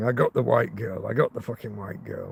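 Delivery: low mutter under the breath, repeated. Retelling what the attacker said after the stabbing: imitating someone muttering. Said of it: "And he was muttering".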